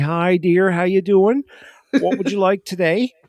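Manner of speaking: put-on Cape Breton accent. Telling how Tim Hortons cashiers in Cape Breton greet customers, imitating a Cape Breton accent. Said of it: "in Cape Breton, they'd say".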